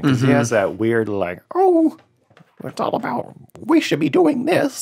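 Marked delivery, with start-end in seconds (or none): 1.5-4.8 put-on Canadian lecturer voice, higher pitch. Describing a public figure's voice, imitating Jordan Peterson. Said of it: "his voice mixed with his accent".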